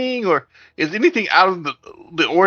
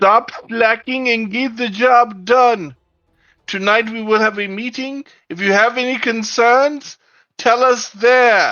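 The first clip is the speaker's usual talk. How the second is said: mild yell, pitched up; 5 semitones higher than usual. A game character yells at slacking paid workers, yelling at top of voice. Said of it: "at the top of my voice, I will yell".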